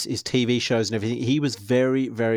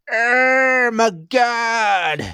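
very high, shrill scream, "god" drawn out; 12 semitones higher, 7 dB louder than usual. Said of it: "he screams out".

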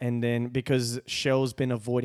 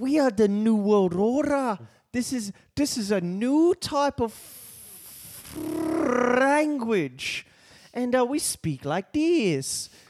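put-on mixed European accent, much higher; 12 semitones higher, 3 dB louder than usual. In a comedy bit about the new world order, speak in a mixed European accent. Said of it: "I'm from all of Europe. At once".

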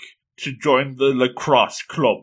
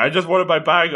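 mock freaked-out, embarrassed, flustered, panicky voice; 3 semitones higher than usual. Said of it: "he's freaking out".

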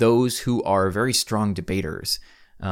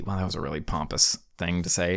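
ordinary talk, nothing marked

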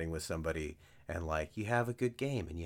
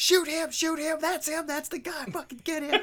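very high, shrill, all-out loud screaming; 8 dB louder than usual. Retelling a passing driver talking to his matched partner, retelling someone screaming. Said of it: "I just hear him screaming".

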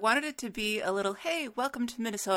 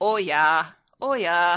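put-on, mock Minnesota accent; 3 semitones lower, 9 dB louder than usual. Speaker, discussing regional accents slipping out, quotes how Minnesotans talk: imitating a Minnesota accent. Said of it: "Minnesotans will say".

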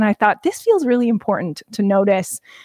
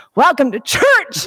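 put-on excited preacher voice, higher pitch; 5 semitones higher than usual. Retelling how a preacher opened a Sunday sermon: imitating Jer's charged preaching. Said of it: "it was charged".

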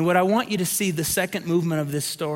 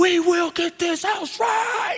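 play-acted very high, drawn-out drill-sergeant scream; 13 semitones higher than usual. Recounting a saturday morning screaming at the kids, retelling a drill-sergeant scream. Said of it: "I'm screaming at the kids".

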